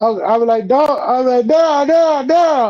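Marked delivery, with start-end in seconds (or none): 1.5-2.7 acted, high yelling, repeated over and over. Recalling waking in pain after a game, calling to an uncle: retelling own past yelling. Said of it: "I'm I'm yelling because my uncle".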